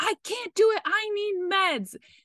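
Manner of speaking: play-acted, shrill, very high-pitched yelling. Retelling labor, refusing to push for the doctor: imitating own yell. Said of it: "I yelled at her".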